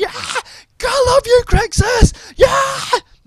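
thrilled, high, drawn-out excited yell. Recalling cheering for crixus at 1 a.m. while watching: retelling excited screaming. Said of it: "I was just like screaming".

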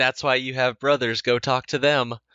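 subdued passive-aggressive. Imitating a movie mom brushing off her kids: imitating a subdued passive-aggressive mom. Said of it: "in a really subdued, like, passive-aggressive way".

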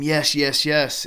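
high, loud, triumphant, joyful scream. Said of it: "and I scream".

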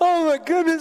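put-on full-on whine, high-pitched. Retelling calling his mom about a letter from the IRS, retelling own past whining. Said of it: "And I'm just whining".

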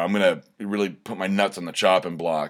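ordinary talk

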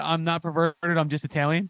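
plain

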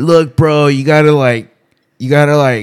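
yelling loudly.

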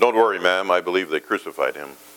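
unruffled, calm, even-toned voice. Telling a story of an elevator complaint, voicing the reply from the back, quiet and calm. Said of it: "a quiet, calm voice responded".

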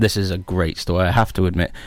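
said with sarcasm. Presenting the news and introducing the first story, sarcastic. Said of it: "Can you hear the sarcasm in my voice?".

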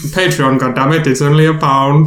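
Indian-accented voice. A podcast host urges listeners to support the show on Patreon, Indian accent. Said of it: "You sound Indian now".

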